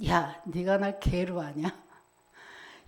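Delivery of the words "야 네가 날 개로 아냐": soft, low, quiet scornful tone with rising pitch. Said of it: "이 말이잖아요".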